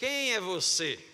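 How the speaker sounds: angry, very loud voice. Showing the congregation how to ask the question: angrier. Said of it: "mais bravo assim".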